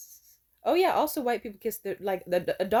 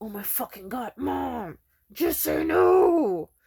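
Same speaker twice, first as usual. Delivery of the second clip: slow, mock simmering rage pressed through words; 4 dB louder than usual. Retelling a friend's angry reaction to his mother: imitating someone seething. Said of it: "he was seething and shit".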